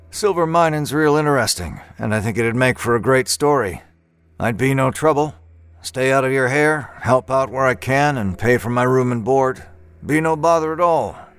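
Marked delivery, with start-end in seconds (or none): none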